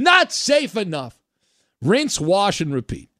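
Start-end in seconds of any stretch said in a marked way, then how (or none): 0.0-1.2 frantic, alarmed, high-pitched panicky shouting. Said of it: "screaming at the top of their lungs".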